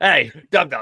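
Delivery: playful, jokey, loud heckling-style yell. Acting out yelling at someone tomorrow: mock yelling. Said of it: "I'm yelling at Jeff tomorrow".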